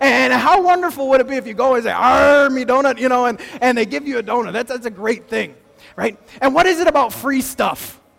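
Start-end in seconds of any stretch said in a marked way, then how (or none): 1.9-3.0 put-on pirate voice. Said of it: "anyone who talked like a pirate".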